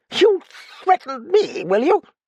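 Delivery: shrill, very high, loud retort. A man, told to keep quiet for his own good, answers back in a voice growing high, shrill. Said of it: "The other's voice grew high".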